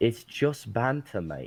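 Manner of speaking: fake, put-on British accent. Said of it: "Did you just turn British on me?".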